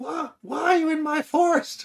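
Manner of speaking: shrill, very loud, very high pitched voice. Reading out the quoted line in a high-pitched voice. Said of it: "That's my high pitched voice".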